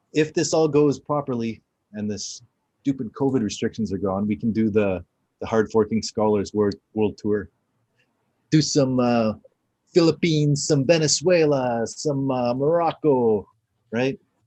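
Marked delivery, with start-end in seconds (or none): 8.5-14.2 slow, put-on Italian accent. Planning a world tour once restrictions are gone, Italian accent. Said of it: "how come you're using an Italian accent".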